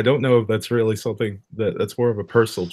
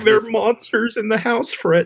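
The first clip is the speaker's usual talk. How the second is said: put-on stoner cartoon voice, pitched higher; 12 semitones higher than usual. Showing an impression done earlier this week: Shaggy from Scooby-Doo voice. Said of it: "alt-right Shaggy from Scooby-Doo".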